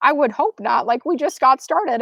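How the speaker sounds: ordinary talk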